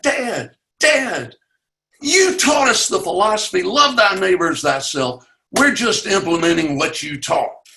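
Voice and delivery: mock yelling, fired back, voice pitched high. Retelling yelling back at dad during an argument: retelling yelling back. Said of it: "And I yelled back".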